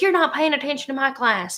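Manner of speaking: high, cross, angry scolding voice. Retelling a second grade teacher scolding about yawning: imitating a mad teacher. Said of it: "my teacher used to get so mad at me".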